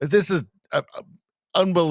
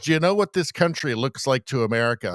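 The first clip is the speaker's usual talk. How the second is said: ordinary talk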